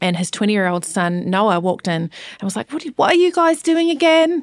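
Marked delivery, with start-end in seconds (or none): 2.7-4.4 bad, terrible, very high British accent. Retelling what a son asked on walking in: terrible British accent as Noah. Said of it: "That's a terrible".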